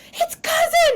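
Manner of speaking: high, loud excited screaming.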